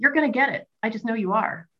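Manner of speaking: high, eager, excited cheering.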